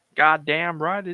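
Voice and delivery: put-on rough, gruff Texan accent. Suggesting a voice for a character at the game table: gruff red-state Texan voice. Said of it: "he's sort of like gruff red state Texan".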